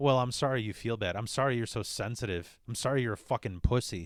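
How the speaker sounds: put-on dismissive voice. Acting out how a narcissist apologizes: imitating a narcissist's dismissive apology. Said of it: "the way a narcissist apologizes is like".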